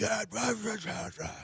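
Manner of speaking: put-on very high, excited, shrieking kid-like yell. Retelling hearing his son from the shower: imitating son screaming. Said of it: "screaming at the top of his lungs".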